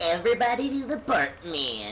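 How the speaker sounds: put-on high, swooping cartoon kid voice. Host opening a video for viewers, doing a Bart impression. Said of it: "that's my impression of Bart".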